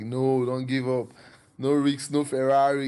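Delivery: loud, pumped-up, hyped-up voice. Describing two inner voices, acting out the loud, hyped-up one. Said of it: "the other voice will just be loud".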